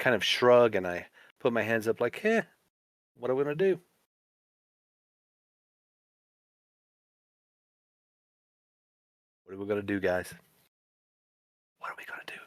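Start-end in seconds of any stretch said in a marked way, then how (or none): 3.2-12.4 hushed, helpless-sounding half-whisper. In character, shrugging with hands up to the group, half-whispering. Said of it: "I'm whispering this, of course".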